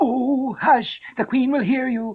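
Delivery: scared, hushed whisper. Narrating a story, the rabbit speaks to Alice in a frightened whisper. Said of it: "The rabbit whispered in a frightened tone".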